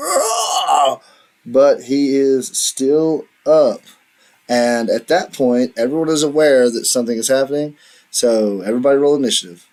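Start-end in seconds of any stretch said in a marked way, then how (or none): 0.0-1.0 shrill scream of pain. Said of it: "he screams".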